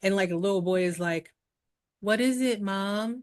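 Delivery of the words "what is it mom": stilted, wooden, stiff and slow acted delivery. Retelling a story, voicing a little boy answering his mom; mimicking stiff delivery. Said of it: "stiff conversation".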